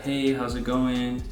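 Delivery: mild, soft, meek voice. Demonstrating the way of speaking that won't capture anyone's attention, very low voice. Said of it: "if you have a very like low voice".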